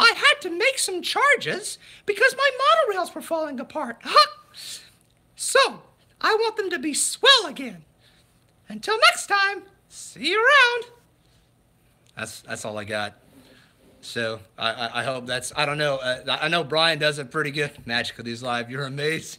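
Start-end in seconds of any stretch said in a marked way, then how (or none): 0.0-10.8 put-on high cartoon mouse voice. Joking about charging viewers to watch: Mickey Mouse voice. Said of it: "to do my impression".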